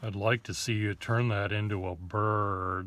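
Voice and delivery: level, dry, flat deadpan with "bird" drawn out. Recalling a friend's request while drawing together: imitating Russell Facemeyer's deadpan voice. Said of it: "He has that sort of a voice which I'm doing a very bad imitation of it, but it's sort of uh, a deadpan voice".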